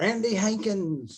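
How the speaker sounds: put-on very high, all-out, top-of-lungs yell. Retelling calling out to someone up on a stage: imitating a yell at top of voice. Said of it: "I yelled at the top of my, my voice".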